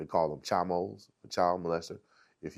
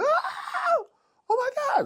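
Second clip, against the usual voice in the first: very high, very slow, drawn-out scream; 7 dB louder than usual. Retelling the nurse finding the beaten man in the cell, imitating a scream. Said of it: "the nurse came by and screamed".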